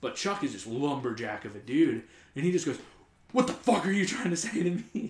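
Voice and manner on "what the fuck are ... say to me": put-on, pitched-up, furious, in-your-face freak-out. Retelling how Chuck got in the driver's face, imitating Chuck freaking out. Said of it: "he starts freaking out on her".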